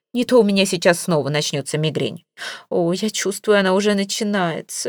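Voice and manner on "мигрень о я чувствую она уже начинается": plain reading voice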